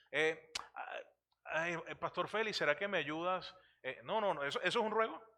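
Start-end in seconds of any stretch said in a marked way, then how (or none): 1.4-3.5 timid, half-hearted pleading tone without urgency. Demonstrating a plea to Pastor Félix in a timid, not urgent plea. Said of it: "parece que no estoy muy urgido... tengo algo de pena... cohibido".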